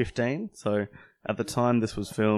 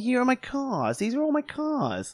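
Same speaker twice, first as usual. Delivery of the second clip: very high, swooping put-on voice. Imitating Jay Leno after he is said to have the worst voice: Jay Leno voice. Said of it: "That's my Jay Leno".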